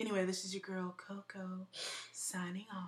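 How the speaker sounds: soft, silky, velvety, smooth chocolatey voice. Signing off the show, the host speaks in a smooth, chocolatey voice. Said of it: "signing off now in this smooth, chocolatey voice".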